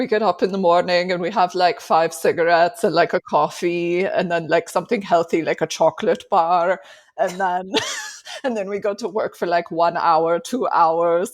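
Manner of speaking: ridiculous fake European accent from no country. Retelling a comedy sketch about Europeans: ridiculous fake European accent. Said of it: "ridiculous accent that is no country".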